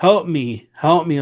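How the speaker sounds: put-on woman's voice crying out in distress, screaming. Retelling how something screamed in a woman's voice, imitating a woman's scream. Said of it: "in a woman's voice, just make this scream".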